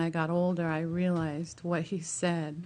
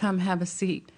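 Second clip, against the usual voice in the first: normal talking voice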